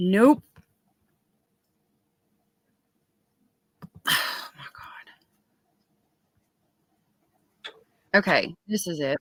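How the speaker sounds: hushed, breathy whisper under the breath. Pulling up the first submission for viewers, whispering. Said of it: "why are we whispering?".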